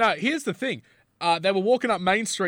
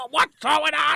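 put-on yelling toy voice, higher; 12 semitones higher, 3 dB louder than usual. Imagining Woody doing Liam Neeson's line: Tom Hanks as Woody, yelling. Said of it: "and very Tom Hanks".

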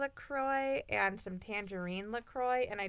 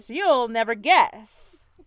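very loud, shock-jock-style radio DJ patter; 14 dB louder than usual. Among friends, asked to say a phrase in a radio voice: shock jock voice. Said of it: "That's my shock jock voice".

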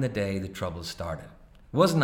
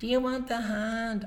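very high, slow, put-on girl's voice; 14 semitones higher than usual. Narrator reading someone mimicking his question back at him, in a girl's voice. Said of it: "our Paddy says in a girl's voice".

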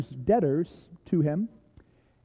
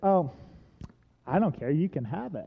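put-on annoyed cashier voice, quieter; 5 dB quieter than usual. Retelling a childhood store visit, imitating an annoyed cashier. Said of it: "this cashier who was annoyed that i was there".

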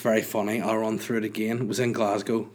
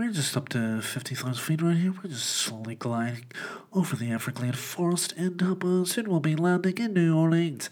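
high, nasal airline-pilot announcer voice; 6 semitones higher than usual. Recalling how he sounded while stuffed up, imitating his own nasal voice as a pilot. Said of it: "I was somewhat of a nasal master".

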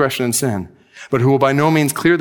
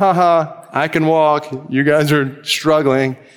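very slow, gloating, half-laughing mocking taunt. Imagining Jesus walking past the struggling disciples: Jesus mockingly laughing, put on. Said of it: "Almost kinda laughing at him".

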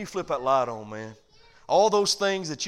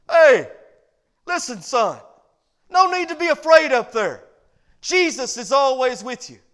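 very loud, high-pitched holler; 9 semitones higher, 9 dB louder than usual. Retelling a mother's reply to her scared son upstairs: imitating a mother yelling back. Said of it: "she yelled back and she said".

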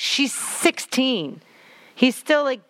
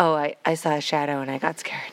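mock deadpan, much lower pitch; 6 semitones lower than usual. Describing a character explaining her scream, imitating her deadpan reply. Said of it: "it was so deadpan".

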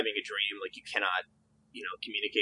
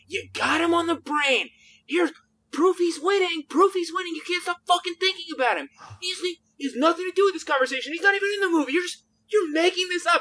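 mock furious screaming tirade, pitched way up; 4 dB louder than usual. Speaker reenacts someone screaming at them; retelling a screamed rant. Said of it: "same quoted rant, screamed at speaker".

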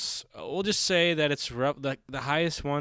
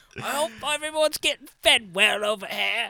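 put-on awful British accent, pitched up high; 8 semitones higher, 3 dB louder than usual. Imagine the Queen visiting everybody every day, in an awful British accent as the Queen. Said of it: "That is an awful accent".

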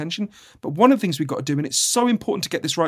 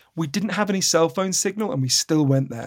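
play-acted voice full of awe and wonder. Retelling his account of going into the woods with friends, imitating awe in his voice. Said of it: "He said that with like awe in his voice".

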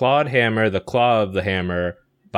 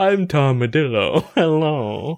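put-on posh voice, higher; 6 semitones higher than usual. Introducing a posh movie character: posh Tom Madillo voice. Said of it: "and he's very posh".

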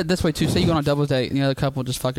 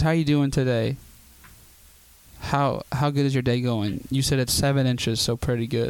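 ordinary talk

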